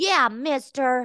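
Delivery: put-on high little baby voice. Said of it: "You do a better baby voice than I do".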